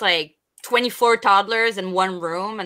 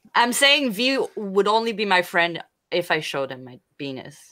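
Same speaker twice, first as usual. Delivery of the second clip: usual speaking voice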